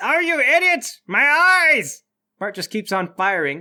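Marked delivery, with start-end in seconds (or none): 0.0-2.0 very high, very slow, shrill, drawn-out yell. Voicing the doctor after a flash grenade: doctor yelling. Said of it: "The doctor yells".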